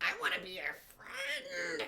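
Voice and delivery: very high, weird, creepy squealing spider voice. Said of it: "in that weird, creepy voice".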